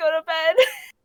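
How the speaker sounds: put-on concerned, anxious voice. Showing how they tell others to go to bed, in a put-on concerned, anxious voice. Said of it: "my concerned, anxious voice".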